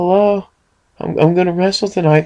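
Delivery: put-on very high, slow, drawn-out girlish voice. Describing a wrestler who talked oddly; doing his Police Academy girl voice. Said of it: "he talked like the girl from like Police Academy".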